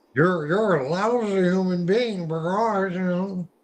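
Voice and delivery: squeaky, silly cartoon-style voice. Explaining how voice tech can change timbre and pitch, the speaker says a line in Goofy voice. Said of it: "I don't do a good Goofy".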